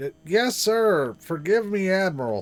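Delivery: very loud, high, slow put-on yelling voice. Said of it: "I gotta do the Gordon Cole voice".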